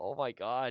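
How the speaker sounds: mock tearful, blubbering, bawling exclamation. Retelling crying at a film character's death: imitating own past sobbing. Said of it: "I was bawling like a baby".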